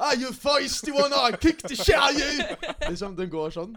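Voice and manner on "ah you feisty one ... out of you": very loud, very high, drawn-out Irish accent. Voicing a boxing kangaroo that talks like Conor McGregor. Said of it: "kenguruen snakker litt som Conor McGregor".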